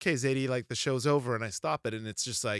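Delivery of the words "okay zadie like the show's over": ordinary talk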